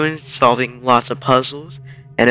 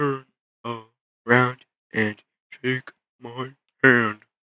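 laid-back, easy, joking delivery; 5 dB quieter than usual. Voicing Sans in a game, greeting the human player, in Sans voice. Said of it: "I'm [name]. [name] the skeleton. I'm actually supposed to be on your watch for human right now. But, you know, I don't really care about capturing anybody".

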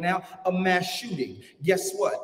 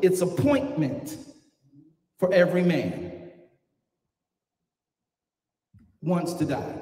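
slow, deliberate, preacher-style delivery with spelled-out emphasis. Preacher slows down to repeat a point to the listeners, slow deliberate delivery. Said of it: "Let's slow it down".

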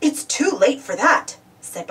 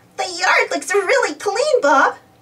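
high, giggly voice, said through giggles; 6 semitones higher than usual. Dizzy speaks to Bob after their yard wins first prize: giggling. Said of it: "giggled Dizzy".

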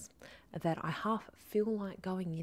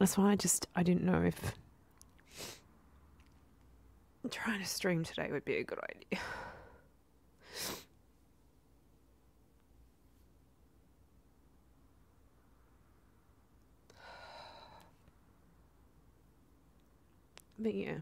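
talking while crying, tearful voice. Apologizing to viewers while venting about work: crying while talking. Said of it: "I really didn't wanna cry on camera".

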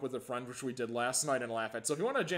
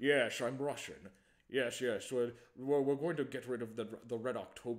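put-on Scottish-accented voice. Mocking an actor playing a Russian in The Hunt for Red October: Sean Connery impression. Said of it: "He's like".

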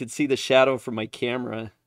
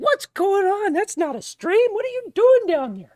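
very high, raised, put-on female voice; 6 dB louder than usual. Streamer imagines his wife reacting to his construction noise: put-on female voice. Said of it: "that's my female voice".

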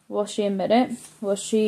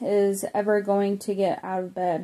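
ordinary delivery

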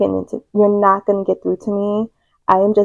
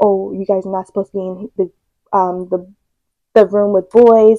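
normal talking voice

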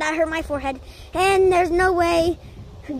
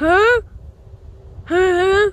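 caveman voice. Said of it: "I was speaking my caveman voice".

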